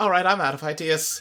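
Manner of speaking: hushed, low, quiet mutter under the breath. In a role-play scene, one character turns to another: very quiet muttering. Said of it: "very quietly mutters".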